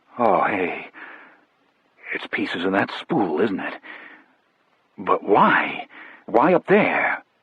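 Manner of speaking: low, shaky, trembling, quavering voice. Narrator reading the first-person character's reaction to a discovery: low, shaky voice. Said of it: "I said in a low, shaky voice".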